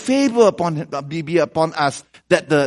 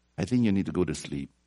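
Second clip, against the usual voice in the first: much quieter mutter under the breath; 9 semitones lower, 11 dB quieter than usual. Recalling what they said to a man who couldn't sleep, retelling a mutter under breath. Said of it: "I said under my breath".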